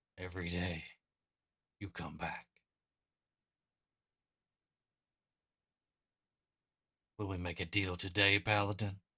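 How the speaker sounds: dark, deep demonic voice. In a game, a demonic voice offers a paladin a deal, deep demonic voice. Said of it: "That deep demonic voice".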